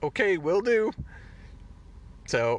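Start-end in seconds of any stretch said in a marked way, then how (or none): 0.0-0.9 mock unruffled, very calm, very high, easy tone. Recapping a scene, the speaker acts out a character's very calm reply. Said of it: "Cobb just very calmly goes".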